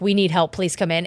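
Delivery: put-on desperate, begging tone. Retelling how a family begs a medium for help: imitating a desperate plea. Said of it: "at this point, they're, like, desperate".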